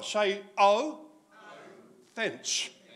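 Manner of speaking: "oh" and "fence" said very slowly, drawn out. Teacher leading a year five class through a word, said a bit slower. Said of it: "we're going to say it a bit slower".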